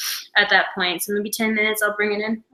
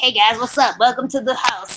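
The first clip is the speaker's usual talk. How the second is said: laid-back, relaxed little wasp voice; 3 semitones higher, 4 dB louder than usual. Telling another speaker about a wasp by the door, voicing the wasp. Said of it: "and he's like".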